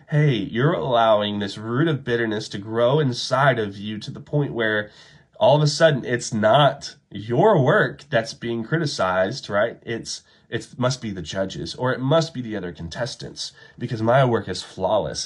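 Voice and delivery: ordinary talk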